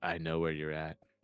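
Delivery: fake whispering. Pretending to taunt a hidden enemy player in voice chat: imitating a whisper. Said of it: "whisper and be like".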